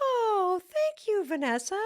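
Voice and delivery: high, swooping "thanks" lifting up at the end. Retelling thanking someone at the end of a breath, voice going up. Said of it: "Like I went up on that".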